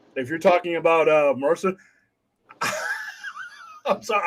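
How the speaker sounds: swooping voice, words fighting back a laugh. Answering Vince about Mercer while holding back a laugh. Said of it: "I'm trying not to laugh".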